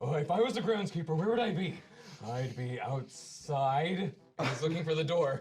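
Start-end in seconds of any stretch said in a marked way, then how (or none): 0.0-4.1 slow, deliberate, ponderous, drawn-out inner voice. A player voices his character's thoughts while searching for the groundskeeper: loud booming voice. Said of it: "this loud booming voice of his thoughts".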